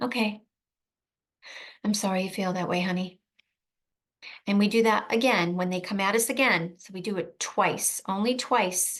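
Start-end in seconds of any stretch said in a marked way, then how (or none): 0.0-3.2 very soft, gentle, non-aggressive tone. Demonstrating how to validate someone's feelings with empathy, very soft tone. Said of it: "very soft tone".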